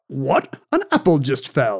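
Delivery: slow, drawn-out, swooping put-on character voice. Doing an impression for others to guess: Isaac Newton impression. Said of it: "I'm going to do an impression of Sir Isaac Newton".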